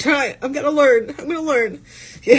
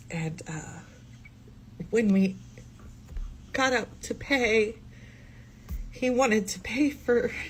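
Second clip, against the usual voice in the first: speaking through tears, almost whispered; 4 semitones lower, 10 dB quieter than usual. Speaker recounting a day out with him breaks down; crying while speaking. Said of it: "why am I crying?".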